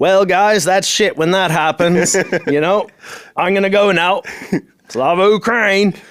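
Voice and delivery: put-on broad American accent, loud and high. Retelling saying goodbye to a group, in a broad American accent. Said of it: "I just put on like a broad American accent".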